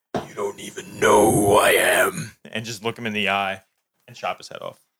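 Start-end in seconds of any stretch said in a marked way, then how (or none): 0.2-2.3 slow, threatening, menacing stage whisper. Voicing a character leaning over a beaten foe: half-whispering a threat. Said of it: "whisper in his ear".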